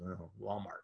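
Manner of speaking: very quiet, hushed, sheepish voice. Retelling a colleague's answer at a party: imitating a sheepish reply. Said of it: "And very sheepishly".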